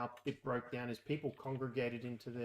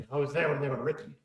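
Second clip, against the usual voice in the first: booming, very loud film hero delivery; 2 semitones higher, 10 dB louder than usual. Replying to a line about the old laws: Liam Neeson voice. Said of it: "It was my Liam Neeson voice".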